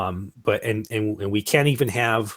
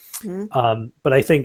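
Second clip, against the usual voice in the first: ordinary delivery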